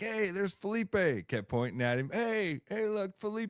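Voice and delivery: put-on drunk, tipsy-sounding voice. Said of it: "he was a little bit drunk".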